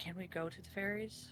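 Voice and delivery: hushed, half-whispered, very quiet voice. Asking a companion quietly behind the group: half-whispering.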